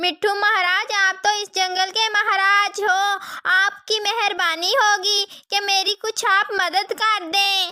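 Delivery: crying, weeping, tearful voice. A mother sparrow begs the jungle king for help, crying. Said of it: "[name] जा रहे होते हैं तो वो देखते हैं एक चिड़िया बैठी हुई थी जो बहुत ज्यादा रो रही थी। / जब मैं अनाज लेकर वापस आई तो मैंने देखा कि एक उल्लू मेरी बेटी को अपने साथ ले गया है। / [name] जा रहे होते हैं त".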